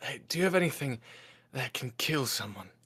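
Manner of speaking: in a whisper. During a hug, he leans in and speaks to Alabaster, whispering. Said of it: "he sort of whispers".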